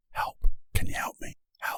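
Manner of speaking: barely voiced whisper under the breath. Speaker shows how people ask for help, in a whisper. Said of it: "we whisper it".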